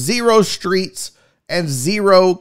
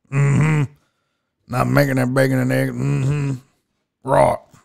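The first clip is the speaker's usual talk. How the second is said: low, creaky, grumbling voice sunk down low; 6 semitones lower, 3 dB quieter than usual. Imitating an ex-wife hungover the next morning: Sling Blade voice. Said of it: "my ex-wife sounds like Sling Blade".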